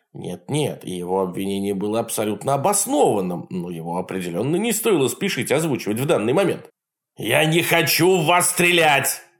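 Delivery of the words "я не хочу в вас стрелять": high, loud bellowing yelled outburst. In a story, an uncle yells at a group of people: yelled. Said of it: "заорал дядя Джек".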